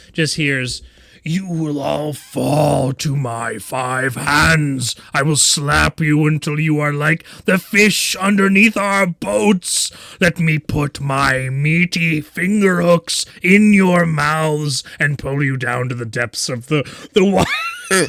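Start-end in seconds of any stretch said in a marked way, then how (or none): 1.3-18.1 yelled, bellowing giant voice. Game master voices a giant at the top of a ladder, giant yelling. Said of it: "and yells out".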